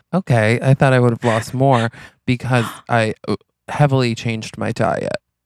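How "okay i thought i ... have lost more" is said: normal talking voice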